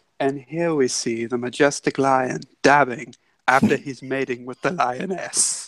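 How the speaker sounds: nature documentary narrator-style delivery. Joking about how documentaries cover lions mating, in a nature documentary narrator voice. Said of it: "get someone to do an impersonation of that".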